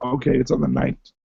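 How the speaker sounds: raspy voice like a heavy smoker. Reading out an event date after saying the voice needs rest: sounds like a heavy smoker. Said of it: "it sounds like I've been smoking a pack a day".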